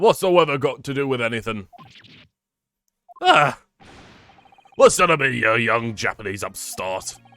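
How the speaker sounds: put-on Cockney accent. Voicing a character who answers small talk about the weather: Cockney voice. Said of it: "It's probably going to be a Cockney voice".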